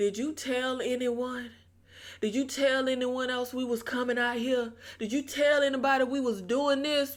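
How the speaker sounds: play-acted sinister, creepy, suspicious and prying tone. Retelling how William asked if anyone knew about the trip: imitating a creepy, suspicious question. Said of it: "William very creepily, suspiciously is like".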